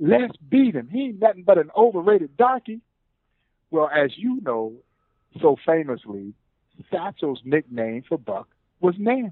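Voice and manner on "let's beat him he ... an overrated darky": high-pitched mock heckling yelled taunt. Retelling a story about a player shouting from the dugout: imitating someone yelling. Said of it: "he yells out".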